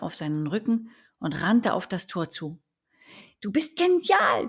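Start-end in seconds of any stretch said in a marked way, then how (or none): 3.4-4.5 squeaky, very high little squeal. Narrator reads the little duck's line to the one carrying her, squealing. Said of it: "quietschte die kleine Ente".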